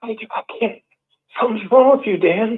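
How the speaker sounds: mock quavering, faltering voice, close to tears. Retelling what a relative said on the phone: imitating a trembling voice. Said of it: "He said it like that, like trembling".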